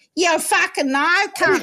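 mock Aussie or Kiwi accent. Quoting people who answer him back, in an imitated australian or kiwi accent. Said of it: "answer me in an Australian or a Kiwi accent".

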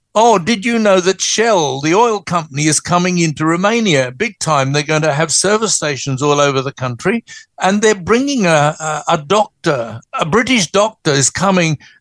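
ordinary talk

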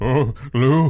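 put-on bombastic, panicked voice. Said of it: "this is sort of the bombast of".

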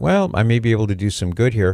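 ordinary delivery

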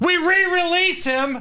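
ranting delivery, pitched very high. Ranting about crime and Democrat leadership, doing a Rob Kendall impression. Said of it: "Doing my Rob Kendall impression here".

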